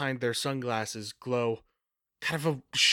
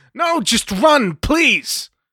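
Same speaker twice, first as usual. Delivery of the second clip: piercing, shrill, very loud, drawn-out high yell; 12 semitones higher, 12 dB louder than usual. Voicing Paige, who sees the enforcer crushing an officer's hand: yelling. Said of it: "sees this and just yells".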